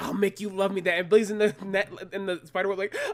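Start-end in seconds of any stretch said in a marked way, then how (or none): 0.0-1.0 put-on angry cartoon kid voice. Retelling a cartoon scene where Jeff yells at his dad: Jeff angry at his dad. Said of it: "gets angry at his dad".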